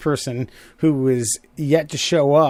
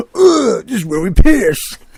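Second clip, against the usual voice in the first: put-on dumb, loud, pitched-up punk skater-kid voice; 7 semitones higher, 8 dB louder than usual. Mocking how the group sounded arriving at the emergency spot, in a stupid skater-dude tone. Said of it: "some stupid ass fucking skater dye tone".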